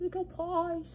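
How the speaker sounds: put-on high-pitched cooing baby talk.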